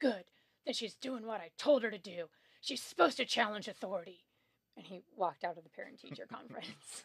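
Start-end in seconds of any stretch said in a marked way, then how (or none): 0.0-4.2 super gruff, loud dad voice. Retelling the father's reply at a parent-teacher conference, super gruff Alaska dad voice. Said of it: "said in his super gruff Alaska dad voice".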